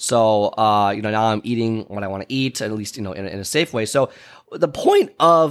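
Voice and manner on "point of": voice cracking partway through, drawn out. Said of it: "hear that voice crack right there".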